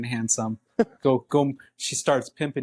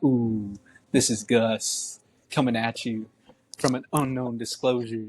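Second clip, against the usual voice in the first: put-on slow old-school late-night radio DJ voice; 2 semitones lower than usual. Retelling how a nerdy man talked on after-dark radio, imitating Gus's radio voice. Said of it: "that's that old school radio talk".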